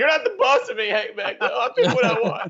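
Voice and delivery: very high, fake-tearful crying outburst. Imagining someone protesting the show's picking rules: mock crying. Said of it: "start crying, going".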